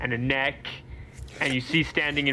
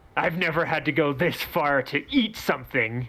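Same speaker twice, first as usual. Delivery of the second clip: furious, snarling, angry dragon creature voice. Narrating a shadowy dragon speaking into the players' heads, snarling angry dragon voice. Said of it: "it snarls angrily".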